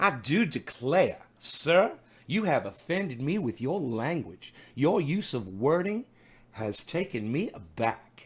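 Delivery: put-on Southern gentleman accent. Recounting a man who phoned in, imitating his southern gentleman accent. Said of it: "so he talked like that".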